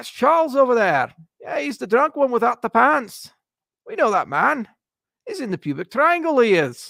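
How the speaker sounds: booming, loud, hammed-up put-on Scottish accent. Speaker imagines people in Edinburgh recognizing him, in his Scottish accent. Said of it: "my Scottish accent that's really good".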